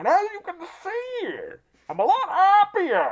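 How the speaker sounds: high, swooping film character voice. Retelling a movie scene in the villain's voice: Nicholson Joker voice. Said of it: "like Nicholson Joker".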